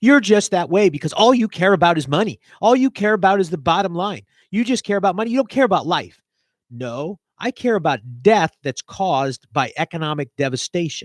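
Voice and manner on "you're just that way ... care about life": very sarcastic put-on accusing tone. Voicing what critics would say back to the speaker: sarcastically imitating critics. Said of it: "and I'm being very sarcastic".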